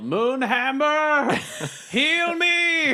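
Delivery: very high, shrill battle-cry yell. Playing a character calling for healing: yelling a battle cry. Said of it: "and yell".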